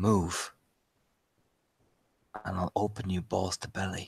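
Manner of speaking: low, hushed, menacing half-whisper. Narrating a scene, voicing someone behind the listener: half-whisper in the ear. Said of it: "this whisper in your ear".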